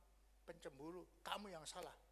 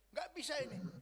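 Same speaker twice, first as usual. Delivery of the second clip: indignant, sharp tone, raised and high; 7 semitones higher, 9 dB louder than usual. Acting out someone's quoted complaint, raised high-pitched tone. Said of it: "Dan nadanya tinggi ya".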